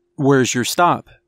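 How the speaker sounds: ordinary delivery, nothing marked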